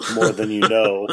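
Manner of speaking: mock flat, expressionless voice. Retelling a TV episode moment with Elise: mimicking Paul's deadpan reply. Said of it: "he was so deadpan about it".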